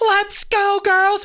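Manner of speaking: shrill, very high, loud pep cheer. Retelling how an announcer cheered into the microphone: imitating cheering into a microphone. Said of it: "she would be like".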